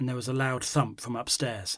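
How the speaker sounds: plain reading voice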